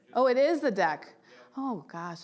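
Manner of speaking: anxious, nervous, flustered, thrown-off tone. A presenter putting up the slide deck before speaking, nervous. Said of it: "I'm so nervous".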